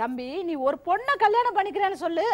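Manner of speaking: ordinary delivery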